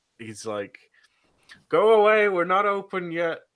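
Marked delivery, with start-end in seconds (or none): 1.7-3.4 very high, very loud, drawn-out yelling. Voicing a character who is yelling at the window: yelling at the window. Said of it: "he's just yelling at the window".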